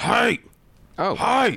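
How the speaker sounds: puppet character voice. Retelling a group of guys calling out on the street, in a Muppet-like voice. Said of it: "it sounds like a Muppet".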